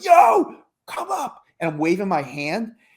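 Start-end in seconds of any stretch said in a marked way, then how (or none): 0.0-1.4 mock, very high, raw, rough, carrying shriek. Retelling waving someone up to a party: imitating own screaming. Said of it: "But I'm screaming".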